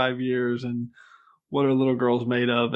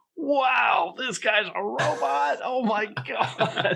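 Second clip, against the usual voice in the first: put-on childlike wonder, very high, slow and drawn out; 10 semitones higher than usual. Retelling watching the show at ten years old: imitating his ten-year-old self amazed. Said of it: "I'm ten years old and I'm watching it, like".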